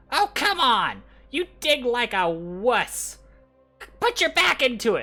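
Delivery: very high, very loud, shrill nagging goblin voice. Narrating for players, one goblin hassling another, in a hassling goblin voice. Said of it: "one goblin kind of like uh, hassling another goblin".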